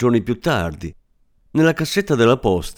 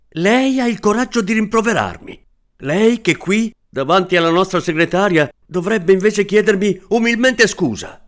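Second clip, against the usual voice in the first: enraged, furious yelling, very high-pitched; 10 semitones higher, 3 dB louder than usual. Reading a story aloud, the narrator rounds on Mr. Zadurecki before their secretary: furious shouting. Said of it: "Mi imbestia lì e urlai".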